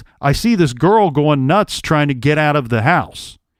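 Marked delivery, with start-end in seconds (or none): none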